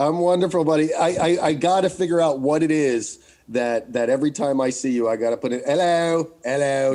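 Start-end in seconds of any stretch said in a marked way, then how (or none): 5.7-7.0 terrible put-on English accent. Greeting his buddy, as he does every time: terrible fake english accent. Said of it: "terrible fake English accent".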